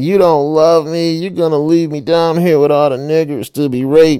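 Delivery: put-on drunk whining. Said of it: "she was whining".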